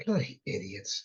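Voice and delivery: quiet mumbled aside under the breath. Asked to add something, a player's character mutters to himself unheard: mumbling under breath. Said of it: "just mumbling to himself where it's not going to be heard".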